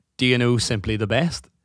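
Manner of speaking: usual speaking voice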